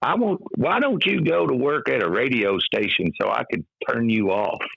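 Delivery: put-on mild Kentucky accent. Retelling a mother's words from childhood, little Kentucky accent. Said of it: "she had this little Kentucky accent".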